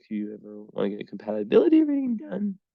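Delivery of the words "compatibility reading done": voice cracks and breaks on a word. Offering listeners a compatibility reading, the speaker's voice cracks. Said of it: "I got the worst voice crack".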